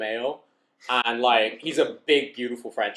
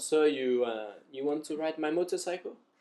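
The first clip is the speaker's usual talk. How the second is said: put-on French accent in English; 4 semitones higher, 6 dB quieter than usual. Retelling how the girlfriend's father offered his motorcycle: imitating a Frenchman. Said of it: "Frenchman. He was like".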